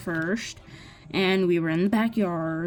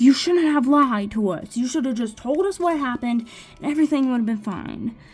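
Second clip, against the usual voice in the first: yelling, higher pitched; 5 semitones higher, 4 dB louder than usual. Retelling what dad said on the phone call: imitating dad yelling. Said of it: "he starts yelling at me".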